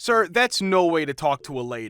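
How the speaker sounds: sternest, firm voice of authority. Retelling a reply to a yelling caller: retelling in sternest person-in-charge voice. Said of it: "In my sternest person in charge voice".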